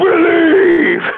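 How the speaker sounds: shrieking yell, very high and very loud. Imitating a man in downtown Toronto who screams one word: imitating a man screaming. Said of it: "it terrifies you, 'cause it's just a guy".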